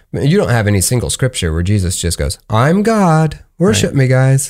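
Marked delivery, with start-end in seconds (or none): 2.4-4.4 awful put-on voice, high and very drawn out. Joking about a scripture line, in an awful Jesus imitation. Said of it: "That imitation of Jesus was awful".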